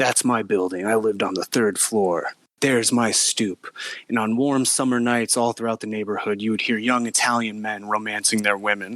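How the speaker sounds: silky, smooth storyteller narration voice. Retelling a movie's opening, the narrator sets the scene over doo-wop music; real smooth voice. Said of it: "saying in a real smooth voice".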